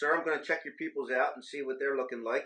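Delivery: ordinary delivery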